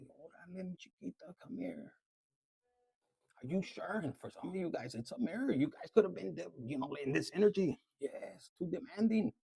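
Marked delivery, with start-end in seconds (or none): 0.0-1.9 put-on soft, whispered baby talk voice. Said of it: "talking to them like a baby".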